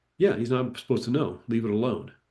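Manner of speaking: mock snide, snarky, dismissive tone. Retelling a spirit guide's answer to a question: imitating a snarky guide. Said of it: "very kind of snarky".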